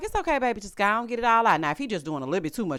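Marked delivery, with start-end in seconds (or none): 0.0-1.6 mock gentle, comforting, soothing tone. Retelling what she says to her crying son: imitating soothing her crying son. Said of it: "I be like".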